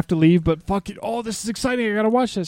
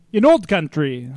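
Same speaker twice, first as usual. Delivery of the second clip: put-on Russian accent; 3 semitones lower than usual. Showing the trick for doing Russian: put-on Russian accent. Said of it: "Whenever I need to do Russian".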